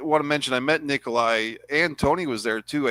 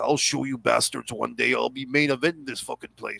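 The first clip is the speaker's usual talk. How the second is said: put-on mutter under the breath; 3 dB quieter than usual. Speaker retelling Bret Hart's reaction to being scratched, retelling Bret Hart muttering. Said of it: "under his breath".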